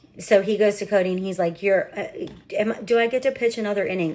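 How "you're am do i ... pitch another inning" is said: hesitant, upset, stumbling put-on voice. Retelling a crying boy asking to pitch another inning: imitating someone upset. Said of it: "Like, upset, like, way more upset than that".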